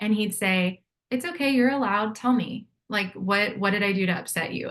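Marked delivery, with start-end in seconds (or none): 1.1-4.7 unruffled, patient, calm and even reassuring tone. Speaker recalling how he answered the speaker's anger: imitating his calm voice. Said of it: "And he'd be so calm".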